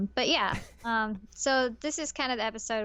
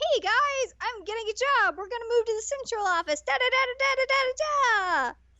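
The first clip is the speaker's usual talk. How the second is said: put-on super excited voice, higher; 13 semitones higher, 3 dB louder than usual. Retelling an episode, quoting the dad's job news: imitating super excited dad. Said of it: "super excited".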